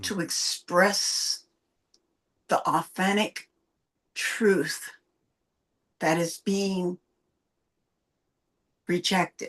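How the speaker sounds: very slow and low, drawn out, word by word.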